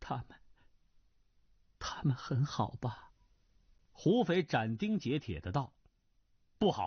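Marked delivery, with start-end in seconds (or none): 0.0-3.1 low, quiet, hushed voice. Nan Lan asks Hu Fei about people he has met, in a low voice. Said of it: "南兰低声问道".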